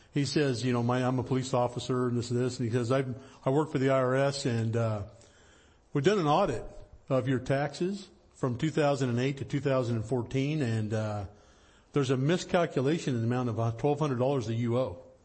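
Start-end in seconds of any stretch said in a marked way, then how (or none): none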